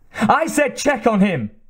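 bellowing, high-pitched, loud bellowed delivery. Narrator voicing a woman giving orders over a fallen man, bellowing. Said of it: "she bellowed".

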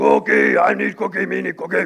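rasped out rough and creaky. Using a cookie as an illustration, answering what Cookie Monster says, Cookie Monster voice. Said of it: "So what does Cookie Monster say?".

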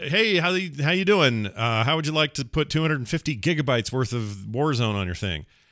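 mock cheerful salesy voice.

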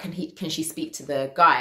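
ordinary talk

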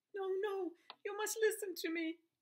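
very high voice, cracking and breaking. As he goes back to sleep, she insists he listen, voice breaking. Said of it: "her voice breaking".

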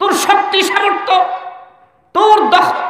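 high, angry mocking shout.

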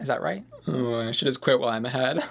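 normal talking voice

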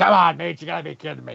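scratchy, creaky, rough raspy put-on voice. Acting out what he'll say back to Meech, in a raspy voice impression. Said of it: "In that raspy voice".

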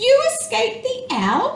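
very high, loud, ringing exclamation. A young bat, just found by her mother, speaks to her: crying out. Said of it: "cried Stella Luna".

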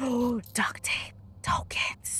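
hushed whisper. A gamer exploring a level and spotting items, whispering. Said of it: "I don't know why I'm whispering so much".

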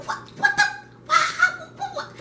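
panicked voice. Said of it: "this is all you hear coming out".

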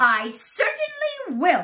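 very high, very loud, shrill, swooping snap. An aunt agrees when another aunt urges beating the boy, snapping. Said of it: "Aunt Spiker snapped".

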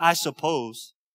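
mock, sarcastic, grudging delivery. Acting out a reply from a scripture passage: imitating a sarcastic reply. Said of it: "Look at the sarcasm in Simon's voice".

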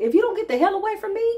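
sassy, attitude-laden, very high, acted-out voice. Retelling own reply in a dream: retelling own attitude. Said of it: "I'm in a dream state with an attitude".

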